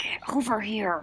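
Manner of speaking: very quiet, hushed yell under the breath. Calling teammates over during a stealth check in the game: quiet yell. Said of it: "I'm gonna yell at Garrosh and Porter like quietly".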